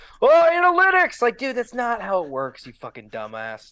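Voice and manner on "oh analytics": very high, shrill yelled outburst. Act out a reaction to a team going for it on fourth down, imitating someone screaming. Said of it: "just screams like".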